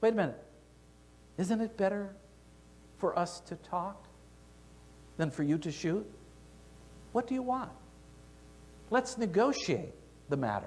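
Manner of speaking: gentle, soft, calming, coaxing tone. Reading a story where a bear speaks to the hunter aiming at it; soft, soothing voice. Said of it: "the bear spoke in a soft, soothing voice".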